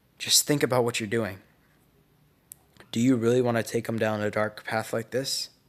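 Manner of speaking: ordinary delivery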